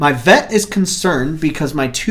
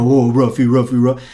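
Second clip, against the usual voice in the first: cooing voice pitched low; 4 semitones lower than usual. Showing how one talks to a pet dog: baby talk to a dog. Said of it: "talk baby talk to him".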